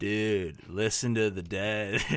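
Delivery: slow, spaced-out stoner drawl. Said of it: "a stoner voice".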